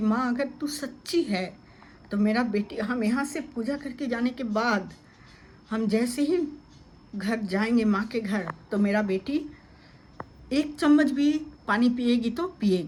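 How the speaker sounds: ordinary talk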